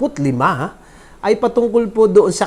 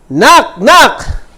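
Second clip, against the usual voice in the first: shrill ringing call, very high and very loud; 10 semitones higher, 9 dB louder than usual. Starting the New Year special knock-knock joke, said loudly.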